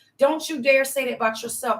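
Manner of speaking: ordinary delivery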